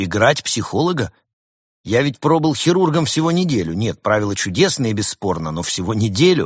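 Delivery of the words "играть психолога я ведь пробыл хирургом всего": ordinary delivery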